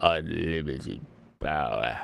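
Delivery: very deep, low, soft, droopy cartoon-dog voice. Quoting a prequel meme: droopy Droopy Dog voice. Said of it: "your little droopy dog prequel meme".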